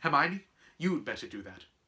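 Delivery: ordinary delivery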